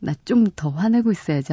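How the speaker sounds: plain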